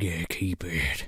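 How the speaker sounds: low, slow, hushed, dead-serious deadpan. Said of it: "he's, like, dead serious".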